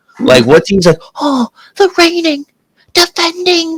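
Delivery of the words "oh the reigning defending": very high, hushed half-whisper, promo style. Mocking a wrestling promo that sounds half-whispered: imitating Paul Heyman half-whispering. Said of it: "it's like he's whispering".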